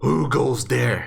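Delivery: very low, deep, creaky, rough giant voice. Narrating to the squad, a voice behind kicked-open doors calls out, very low and very loud. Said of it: "low voice, but very loud, just going like".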